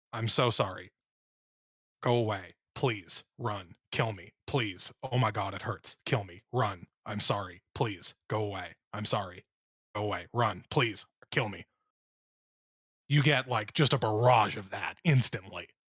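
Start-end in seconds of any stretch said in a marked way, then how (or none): 0.1-11.6 flat, droning monotone string of fragments, no break. Voicing a woman's surface thoughts heard through detect thoughts, monotone rapid fire. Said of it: "All of the thoughts are monotone. All of the thoughts are rapid fire".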